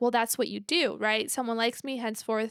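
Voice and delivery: ordinary talk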